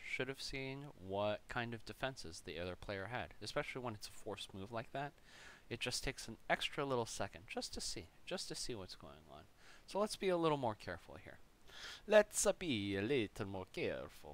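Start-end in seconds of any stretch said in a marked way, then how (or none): 12.1-14.3 bad, terrible, put-on Italian accent. Commenting on own chess game, in a terrible italian accent. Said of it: "I'm doing the terrible, terrible Italian accent".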